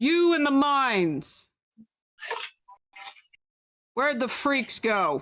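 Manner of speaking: high-pitched, in-character hollering shout. Voicing a character calling down into the mines: NPC shouting. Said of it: "And he shouts".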